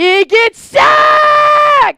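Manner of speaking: very high, very loud scream, sacked stretched out. Calling a football game live, the host reacts to a quarterback sack, screaming. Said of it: "Sorry for screaming".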